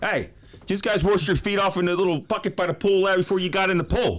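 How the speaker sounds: put-on very high, hollering, bawling old man voice. An actor between takes on set, imitating his dad yelling at people. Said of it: "Like I'm sound like my my old man. I'm gonna walk around yelling at people".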